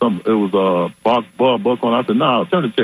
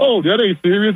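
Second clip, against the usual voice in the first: mock laughing while talking, higher; 9 semitones higher than usual. Retelling how the press secretary explained it: imitating someone laughing while talking. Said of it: "she was just laughing like".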